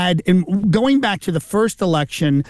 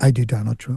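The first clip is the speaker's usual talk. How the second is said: hushed, almost inaudible, low dropped voice; 6 semitones lower, 3 dB quieter than usual. Retelling answering a man's question about the voices he does, in a lowered voice. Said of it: "I lowered my voice and I said".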